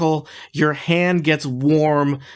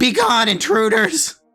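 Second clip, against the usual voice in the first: put-on very high, nasal teenage voice calling out. Narrating the adventure, a voice calls out from behind the broken door, nasally teenage voice. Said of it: "a nasally teenage voice calls out".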